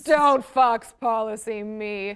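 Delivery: heavy, raspy, rough smoker's voice. Telling a co-host to stop citing fox policy, smoker-sounding voice. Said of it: "sounded like she smoked a pack of Viceroys".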